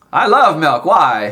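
very loud, booming character voice. A player given a voice by the game master answers a question: talking really loud. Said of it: "You talk really loud".

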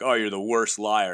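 put-on snide tone. Retelling what colleagues have said for years: imitating a snide dig. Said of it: "they say it in a kinda shitty way".

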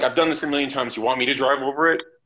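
ordinary talk

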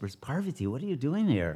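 soft, hushed half-whisper, under the breath. Retelling a story scene in which a man half-whispers, half-whispering. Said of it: "And then he whispers".

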